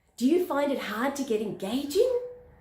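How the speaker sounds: rising pitch at the end of engaging. In an example question about promoting businesses, rising pitch on 'engaging'. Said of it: "I'm going up at the end".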